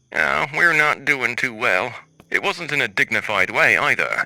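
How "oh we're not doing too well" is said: put-on country accent with a sad tone. Retelling a drive-through customer's reply: imitating a sad country accent. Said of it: "in a country accent, responded sadly".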